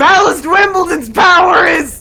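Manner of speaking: high, loud, excited shout. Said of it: "Solomon, like, has an idea".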